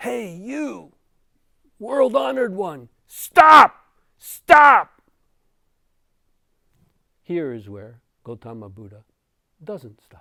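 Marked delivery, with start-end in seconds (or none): 0.0-5.0 loud, high-pitched yelling. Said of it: "And he yells".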